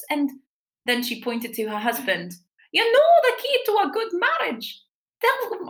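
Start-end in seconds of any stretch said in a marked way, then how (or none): 2.7-5.7 clumsy put-on Scottish accent, very high pitch. Retelling what an older woman said, in a bad scottish accent. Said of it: "It's too early to be doing accents".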